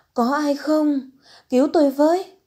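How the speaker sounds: high, loud, terrified cry with voice cracking. A woman about to give birth searches for anyone nearby; voice cracking with fear. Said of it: "Tiếng kêu lạc giọng vì sợ hãi".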